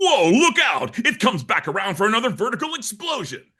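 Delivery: very high commercial announcer voice. Speaker demonstrating his style for an action figure commercial: action figure commercial voice. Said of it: "like an action figure commercial".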